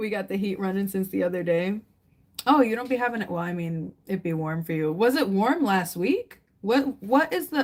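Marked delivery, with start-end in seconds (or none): 6.6-7.6 high, stuttering, stumbling over the opening words. Asking the listener about the usual temperature where they live: stuttering. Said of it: "Sorry, I'm stuttering".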